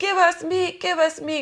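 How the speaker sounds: very high, loud, whiny nagging complaint. Retelling the people complaining about food in the story: imitating people complaining. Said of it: "And they're complaining, like".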